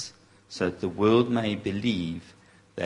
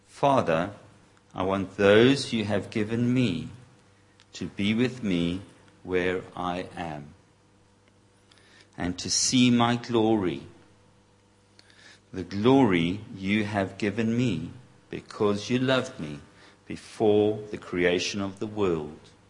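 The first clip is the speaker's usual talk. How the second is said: slow reading with many pauses. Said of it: "to read it like that, that, slowly".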